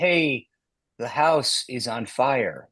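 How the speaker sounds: mock lifeless, level monotone with no energy. Describing a man who lacks oomph, speaker imitates him in a flat monotone.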